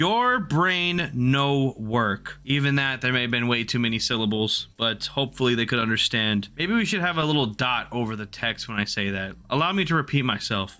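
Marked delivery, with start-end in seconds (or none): 0.0-2.4 very slow, deliberately simplified, broken-down speech. Speaker addresses Oryx players, in slow, broken-down delivery. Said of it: "allow me to break it down slower".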